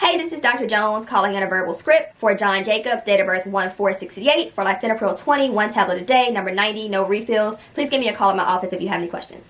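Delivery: very fast, rushed, rapid-fire speech. Demonstrating how a doctor calls in a verbal prescription, very fast rushed talking. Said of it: "The verbal prescriptions will sound a little bit like this".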